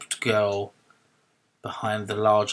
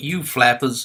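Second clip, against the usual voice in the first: put-on loud young cabbie voice. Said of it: "He laughed".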